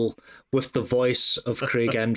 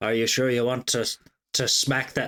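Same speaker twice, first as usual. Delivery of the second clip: put-on Irish accent. Voicing a talking scythe that questions a smack: irish accent as the scythe. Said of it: "you were Irish there".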